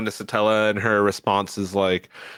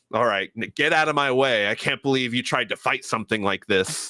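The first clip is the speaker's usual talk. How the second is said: mock arrogant dismissive tone, careless dub-style voice; 3 semitones higher than usual. Comparing dubs, the speaker imitates a character's english voice acting: mock-arrogant, dismissive. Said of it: "where she's a little arrogant, doesn't really care".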